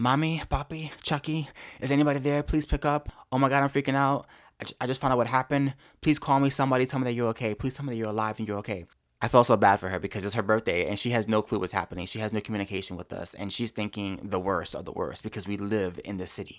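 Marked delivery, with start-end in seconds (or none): 0.0-8.8 put-on frantic, panicked, pleading, begging tone. Retelling the voicemail a woman left for her family: imitating a frantic voicemail. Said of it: "her voicemail was pretty frantic".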